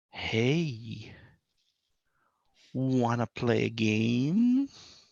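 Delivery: eerie, spooky half-whisper, drawn-out "hey". Positioned behind the gnome, a player character half-whispers to it: spooky half-whisper. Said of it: "I whisper in a kind of spooky voice".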